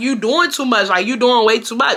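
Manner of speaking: ordinary talk, nothing marked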